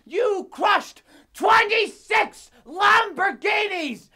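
enraged, furious, very high-pitched yelling. A furious film studio executive shouts at someone: furious shouting.

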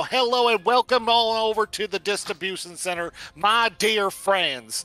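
hammy, over-the-top, monster-like creature voice. A game narrator voices a character greeting everyone, in an overly loud voice. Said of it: "an overly loud skelt".

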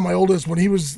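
plain

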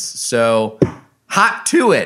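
voice cracking. Host urging listeners to subscribe to the Patreon, voice cracking. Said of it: "my voice cracked on that one".

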